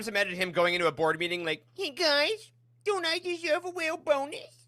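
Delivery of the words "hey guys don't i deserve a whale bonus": put-on very high, slow, whiny baby voice. Mocking someone asking a board meeting for a bonus, Bob in a baby voice. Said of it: "That's how you sound now, Bob. Until you give people money, you're a baby voice character".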